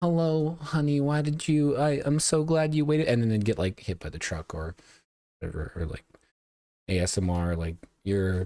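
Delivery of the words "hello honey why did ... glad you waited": high, canned, synthetic text-to-speech AI voice. Describing videos with ai voices, imitating an ai voice. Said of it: "the A I voice would be like".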